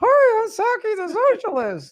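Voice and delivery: dumb, high, swooping sock-puppet voice. Introducing a homemade sock puppet for the first time, in a dumb Saki the Socialist voice. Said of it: "decided to put a dumb voice on it".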